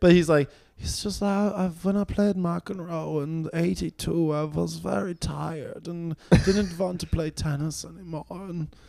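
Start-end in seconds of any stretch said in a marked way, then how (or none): 0.8-8.2 put-on soft, quiet voice with a Swedish accent. Quoting a Swedish tennis player about McEnroe, in Björn Borg Swedish accent. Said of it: "That's Björnborg's specific Swedish accent".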